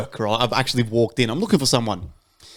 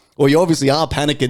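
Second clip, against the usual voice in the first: ordinary talk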